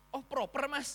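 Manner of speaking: impressed, excited delight. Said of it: "Mereka justru kayak seneng gitu".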